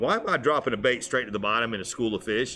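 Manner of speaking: ordinary talk, nothing marked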